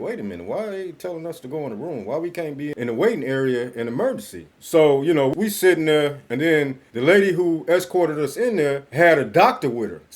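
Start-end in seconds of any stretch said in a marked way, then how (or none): 0.0-4.5 play-acted wary, doubting, suspicious questioning tone. Retelling his wife's questions about being sent to a room: imitating a suspicious tone. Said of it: "she started getting suspicious".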